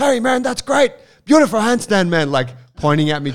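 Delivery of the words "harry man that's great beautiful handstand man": mock, very high, loud called-out yell. Retelling doing handstands when Wim called out, imitating Wim yelling out. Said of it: "Wim starts yelling out".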